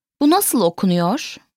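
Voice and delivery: normal talking voice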